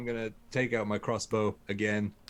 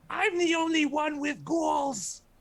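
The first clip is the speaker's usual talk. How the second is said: shrill, high-pitched yell. Firing a crossbow as a character and crying out: yelling. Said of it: "I'm just gonna yell out".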